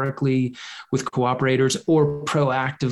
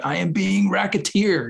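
put-on thick Russian accent, pitched high; 6 semitones higher than usual. Retelling what a man who called the FBI said, in a heavy Russian accent. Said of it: "in a very heavy Russian accent".

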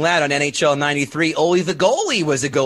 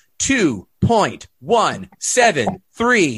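electronic toy voice, pitched higher; 4 semitones higher than usual. Giving box-office figures, the speaker does a Speak & Spell impression. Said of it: "that's my speaking spell impression".

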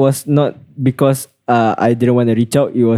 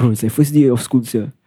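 ordinary delivery

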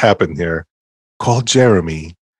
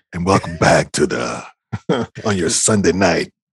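mock deep, whispering radio DJ voice; 3 semitones lower, 4 dB quieter than usual. Mocking the DJ who plays all the slow stuff, imitating a whispering radio DJ. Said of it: "he's always whispering".

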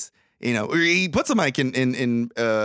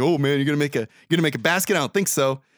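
imitated taunting smack-talk tone. Retelling a basketball player taunting a kid: imitating taunting smack talk. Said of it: "starts fucking smack talking this kid".

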